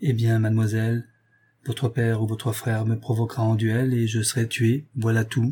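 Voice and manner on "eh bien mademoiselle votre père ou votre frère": usual speaking voice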